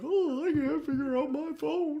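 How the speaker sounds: put-on very high, loud, whiny, befuddled old man voice. Mocking how a movie character now acts: imitating Eli as a confused old man. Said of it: "And now it's like".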